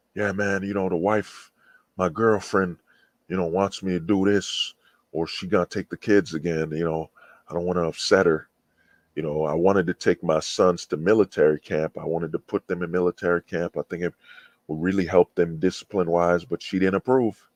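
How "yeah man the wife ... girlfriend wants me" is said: ordinary delivery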